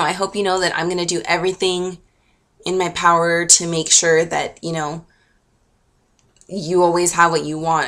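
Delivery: ordinary delivery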